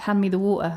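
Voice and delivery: British pronunciation without t sounds. A British speaker shows how British people say it: British accent, dropped T's. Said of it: "British people always drop the T's in what they say? So we say like".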